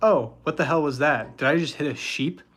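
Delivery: ordinary talk, nothing marked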